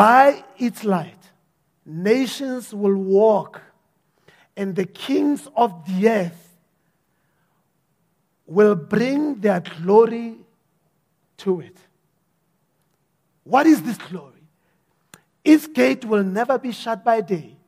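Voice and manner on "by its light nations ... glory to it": slow, deliberate, unhurried reading aloud. Reading a bible passage aloud to listeners, reading slowly. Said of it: "Let me read it slowly".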